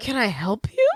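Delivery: play-acted sincere, caring, genuinely concerned tone. Retelling how a character reacts to someone at the table: imitating genuine concern. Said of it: "he says it with the most genuine concern".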